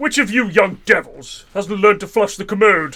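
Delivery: lofty, posh upper-class accent. Friends riffing on the word 'disgusting', putting on a posh accent. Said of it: "doing like a posh accent".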